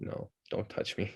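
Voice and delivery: slow, soft, whispered, aloof cat voice. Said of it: "He's just like".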